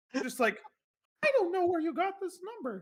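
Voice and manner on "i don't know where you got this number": very high, squeaky, fake put-on voice. Acting out a silly bit, really high-pitched put-on voice. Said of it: "talking in a really high pitched voice".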